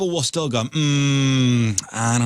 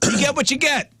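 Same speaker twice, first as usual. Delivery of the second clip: very high-pitched, put-on Italian accent; 14 semitones higher than usual. Right after asking for it, saying the phrase in an Italian accent. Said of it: "Can you say it with an Italian accent?".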